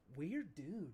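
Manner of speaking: hushed whisper. Voicing a character who whispers a remark to Aura: whispering. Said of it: "He whispers to you".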